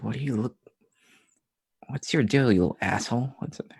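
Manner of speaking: muttering under the breath. Voicing a character muttering at a goose: muttering under her breath. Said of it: "Steph under her breath".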